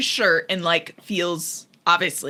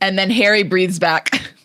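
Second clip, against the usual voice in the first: ordinary talk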